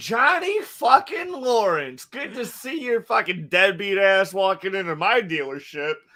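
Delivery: put-on, very drawn-out, slow, smug, condescending. Retelling Danny's attitude toward Johnny: condescending Danny impression. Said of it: "He's like".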